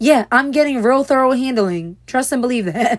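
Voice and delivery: heavy sarcasm, saying the opposite of what's meant. Complaining that your escalated case still gets no answers, sarcastic. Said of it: "That's sarcasm".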